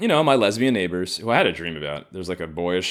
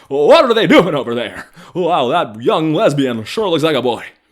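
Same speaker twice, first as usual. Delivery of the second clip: put-on very loud, high, belted old-movie style voice; 8 semitones higher, 8 dB louder than usual. Doing an impression while describing watching the neighborhood: Jimmy Stewart impression. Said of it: "I'm like fucking, uh, Jimmy Stewart in Rear Window".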